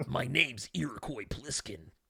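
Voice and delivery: rough military voice, very quiet. Talking about Escape from New York inspiring Solid Snake, in a Solid Snake voice. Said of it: "It's so easy to do uh Snake's voice".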